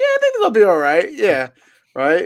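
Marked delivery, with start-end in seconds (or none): 0.0-1.1 very high, raised, upward-lilting rising inflection. Mimicking the other speaker's Jets prediction: imitating a rising inflection. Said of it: "your inflection went up in your voice".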